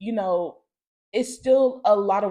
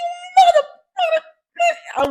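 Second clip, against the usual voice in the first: very high, fast, swooping screaming; 8 dB louder than usual. Retelling being kicked out into the street: imitating own past screaming. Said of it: "I remember being in the street screaming".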